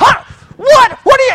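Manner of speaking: very high, loud, sputtering upset outburst. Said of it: "you start yelling at your husband".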